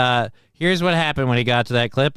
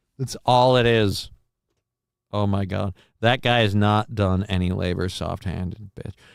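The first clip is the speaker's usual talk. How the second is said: usual speaking voice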